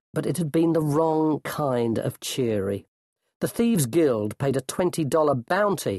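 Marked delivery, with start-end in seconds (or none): none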